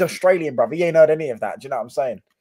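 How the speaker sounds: ordinary delivery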